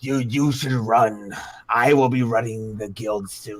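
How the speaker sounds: threatening, menacing spectral ghost voice. Voicing a ghostly old man warning the party to run: menacing ghost voice. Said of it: "He's like".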